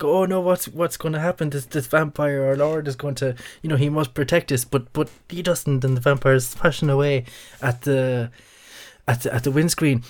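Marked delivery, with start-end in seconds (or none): 0.2-4.7 mock panicked, frightened screaming, much higher. Storyteller acting out people in a car as a vampire attacks, acting out panicked screaming. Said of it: "they're screaming and they're shouting".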